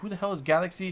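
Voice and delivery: plain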